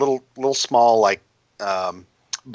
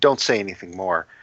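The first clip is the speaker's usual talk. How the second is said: muttered under breath, lower pitch; 4 semitones lower than usual. A man glances around before speaking, muttered under his breath. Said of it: "he just kind of says under his breath".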